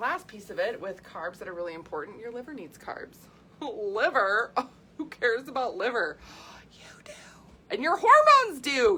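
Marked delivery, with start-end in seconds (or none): 6.7-9.0 shrill, booming outburst, high and loud, swooping. Talking to listeners about fueling properly with carbs, yelling. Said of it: "Sorry, I'm yelling".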